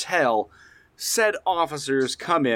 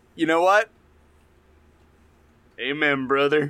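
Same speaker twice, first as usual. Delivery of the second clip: thick, exaggerated, put-on Southern American accent. On a podcast, meeting the demand for accents, in the most Southern American accent. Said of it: "I demand that they be done in the most Southern American accent".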